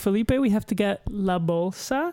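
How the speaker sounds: put-on slow, drawn-out, condescending girl's voice. Imitating a young classmate who talked down to the speaker, imitating a girl's voice. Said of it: "that's exactly how she would say it".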